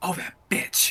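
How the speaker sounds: hushed, muttered under the breath. In character, finding the pockets empty: muttered under breath. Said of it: "I'm gonna say that under my breath".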